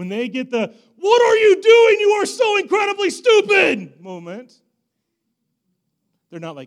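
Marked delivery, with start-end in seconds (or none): 1.0-4.0 very loud, very high, shrill, furious scream. Imitating screaming at his sons mid-scolding: imitating a parent screaming. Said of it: "when I'm screaming at them".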